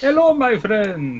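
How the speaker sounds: put-on Middle Eastern-sounding accent. Game master recovering a lost character voice for the players: Brazen voice, Middle Eastern-sounding. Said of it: "that sounds more Middle Eastern".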